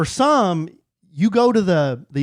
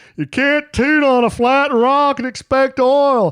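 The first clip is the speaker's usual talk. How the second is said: pitched-up, folksy Southern drawl; 9 semitones higher, 4 dB louder than usual. Quoting Dr. Phil, as referenced on a podcast: Dr. Phil impression. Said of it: "referencing Doctor Phil".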